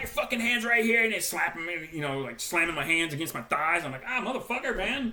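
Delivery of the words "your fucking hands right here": mock screaming. Man retelling being manhandled by people screaming at him, retelling someone screaming. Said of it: "they're screaming at".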